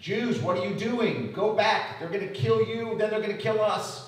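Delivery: loud, high-pitched screaming.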